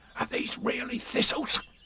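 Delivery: anxious, hushed, breathy whisper. Reading a story aloud, the narrator gives one character's question to another, whispering. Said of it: "he whispered".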